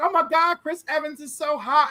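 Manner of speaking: crying, screaming, tearful gushing outburst. Retelling old excitement over a celebrity: imitating own past screaming and crying. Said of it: "I would just scream and cry and be like".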